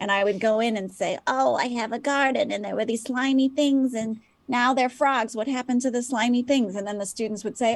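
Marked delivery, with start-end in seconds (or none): 1.3-6.8 put-on confused elderly woman voice. A teacher recounts role-playing for a science class in a forgetful old lady voice. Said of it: "pretend to be a very old lady who forgot a lot of things".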